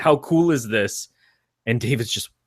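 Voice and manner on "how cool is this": mock thrilled, eager wonder, excited, drawn out. Retelling a film scene, quoting John: imitating John sounding excited. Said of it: "And he's all excited".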